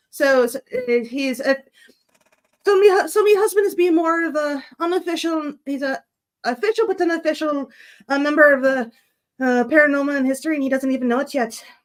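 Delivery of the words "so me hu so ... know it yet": weak, so-so, not-quite-convincing Irish accent. Saying a line in an accent after being asked to: weak Irish accent. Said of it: "it's not the best Irish".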